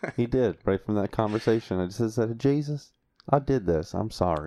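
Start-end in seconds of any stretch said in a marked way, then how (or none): 2.4-4.5 slow, put-on country accent. Retelling how they apologized to jesus, slipping into a country accent. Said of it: "Why do you immediately jump into a country accent".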